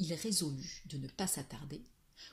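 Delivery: plain reading voice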